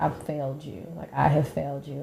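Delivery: tearful, bawling, sobbing, crying voice. Retelling a mother's phone call from the hospital: imitating someone bawling. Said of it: "bawling, crying".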